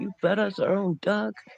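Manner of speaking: very high freaked-out outburst of disbelief. Retelling how an older brother reacted at dinner: imitating someone freaking out. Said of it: "freaking out".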